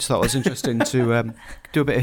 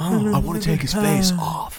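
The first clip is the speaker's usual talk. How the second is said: put-on jowly actor voice, higher pitched; 5 semitones higher than usual. Correcting another speaker's impression: Nicolas Cage voice. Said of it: "he's more like".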